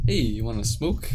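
usual speaking voice

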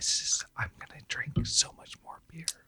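hushed, soft whisper.

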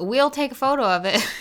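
put-on country accent. Repeating the other person's words to show they sound country: country accent. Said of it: "You sound really country for some reason".

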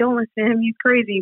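plain

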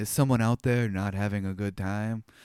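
put-on flat deadpan. Describing a scene, imitating Buckaroo stopping the show on hearing crying, deadpan. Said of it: "he delivers that with such like dead".

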